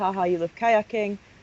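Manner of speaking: ordinary talk, nothing marked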